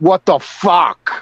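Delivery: put-on brash Boston voice. Describing a masshole: imitating a typical masshole. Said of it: "the typical masshole".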